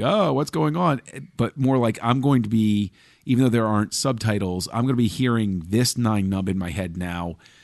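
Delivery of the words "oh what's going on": overwhelmed alien voice, pitched up high. Imagining a film character reacting in the cockpit: overwhelmed Nien Nunb voice. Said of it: "overwhelmed alien".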